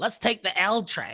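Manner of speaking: put-on Chicago accent, improv comedian style. Speaker doing a bit between hosts, in a Chicago improviser impression. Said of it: "my Chicago improviser uh, impression".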